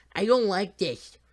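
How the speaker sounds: shrill, very loud, high-pitched whine. Reading a novel aloud, a scared boy in a moving crate: whining. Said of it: "whines Emby".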